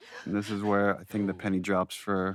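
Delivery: ordinary talk, nothing marked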